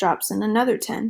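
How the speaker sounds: ordinary delivery, nothing marked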